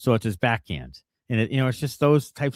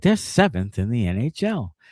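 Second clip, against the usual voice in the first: put-on broadcaster voice. Retelling how a broadcaster announced a stat: Howard Cosell voice. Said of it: "He even said it like that, like he was Ho-, Howard Cosell".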